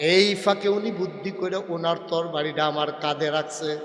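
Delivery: ordinary delivery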